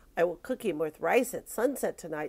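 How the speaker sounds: plain reading voice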